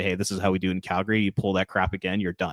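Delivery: ordinary delivery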